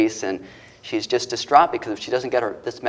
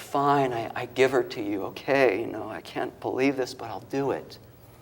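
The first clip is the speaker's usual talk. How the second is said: put-on crying voice, quieter; 7 dB quieter than usual. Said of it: "she's just crying".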